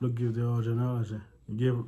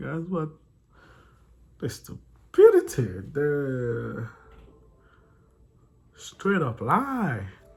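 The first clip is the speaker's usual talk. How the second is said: very slow, drawn-out, loud, swooping speech through laughter; 3 semitones higher, 5 dB louder than usual. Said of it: "I'm sorry for laughing".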